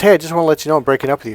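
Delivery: cheerful, bright voice. Retelling a girlfriend's breakup phone call: imitating a happy, cheerful voice. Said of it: "she was really happy and cheerful".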